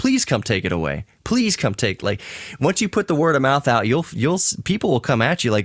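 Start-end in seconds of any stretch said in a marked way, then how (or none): 0.0-2.0 mock begging, put-on pleading. Recounting the replies to a Facebook request for an old TV, mock begging. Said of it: "they were just like begging".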